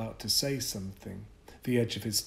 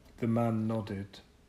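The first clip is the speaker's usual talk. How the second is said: plain reading voice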